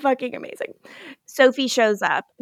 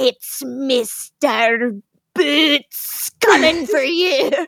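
put-on Scottish accent, put on for laughs. Imagining how a man would say the name, in a Scottish accent. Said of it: "funny name to hear in like a Scottish accent".

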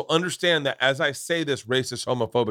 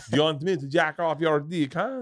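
put-on Québécois French accent on English words; 3 semitones higher than usual. Riffing on a retold line from Quebec: Quebec French accent. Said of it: "I know the accent".

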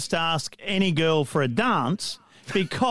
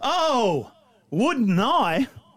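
happily surprised exclamation, delighted, pitched up; 5 semitones higher than usual. Reading a joke aloud, the girl accepts a dance: surprised and happy. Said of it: "She looked up very, very surprised and happy".

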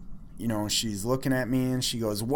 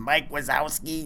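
put-on raspy old lady voice from decades of smoking; 2 semitones higher than usual. Describing an old lady who smoked for years, do the Monsters, Inc. lady voice. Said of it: "She's got that voice like the lady on Monsters".

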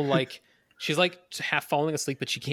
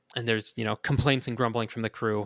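ordinary talk, nothing marked

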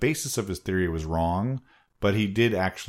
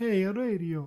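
put-on Italian accent, pitched higher; 13 semitones higher than usual. Speaker acts out Marconi, a suave Italian guy: Mario-style Italian accent. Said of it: "He sounded like Mario".

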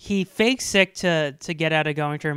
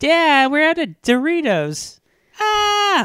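put-on high, loud kid's voice calling out. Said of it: "you just hear a voice go".

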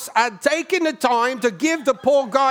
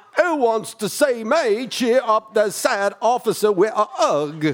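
put-on English accent; 3 semitones lower than usual. Reading campaign lines in an impression: Christopher Walken voice with English accent. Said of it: "Christopher Walken with an English accent".

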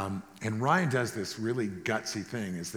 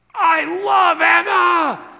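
rough, very loud, very high blurt, one word stretched; 16 dB louder than usual. Retelling a flustered guy suddenly bursting out in the lunchroom, re-enacting a blurted outburst. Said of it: "he just burst out".

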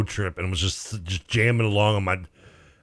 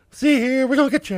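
very high, squeaky cartoon gangster voice, fifties style; 4 dB louder than usual. Speaker mocks a cartoon voice he finds creepy, bad Mickey Mouse voice. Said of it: "It's not what how you want Mickey Mouse to sound".

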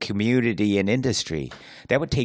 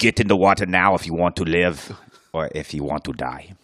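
put-on Austrian accent; 5 semitones lower than usual. Describing someone with a gun to your head ordering a dive, the speaker uses an Austrian accent. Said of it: "Austrian at the worst".

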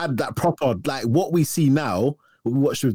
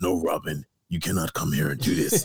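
very deep, low, hushed, menacing voice; 7 semitones lower, 5 dB quieter than usual. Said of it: "his voice was so menacing".

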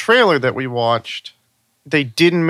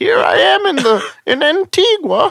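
goofy, very high, silly put-on voice. Asked by the other speaker to do a funny voice: funny voice. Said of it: "talk like that whole movie".

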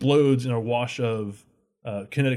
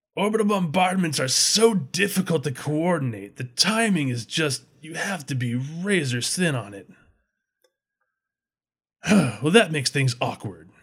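big, resonant voice, called out grandly; 4 semitones higher than usual. A figure on the ridgeline addresses the listeners in a booming voice. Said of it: "A booming voice from along the ridgeline".

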